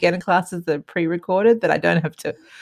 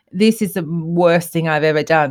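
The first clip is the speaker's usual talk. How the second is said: ordinary talk, nothing marked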